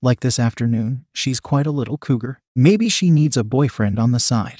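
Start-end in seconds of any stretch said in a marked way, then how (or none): none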